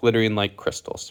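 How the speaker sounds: ordinary delivery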